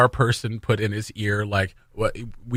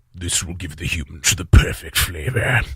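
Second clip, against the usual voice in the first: put-on voice, much lower, heavy with saliva; 4 semitones lower than usual. Quoting a character's line, spitty Sarek the Preparer voice. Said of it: "he speaks with a lot of saliva in his".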